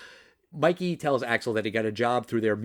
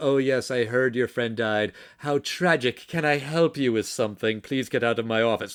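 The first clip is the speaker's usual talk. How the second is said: voice dripping with disdain, dismissive villain voice. Retelling how the movie villain talks to the cop: imitating Victor Maitland's disdainful voice. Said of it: "that disdain in his voice".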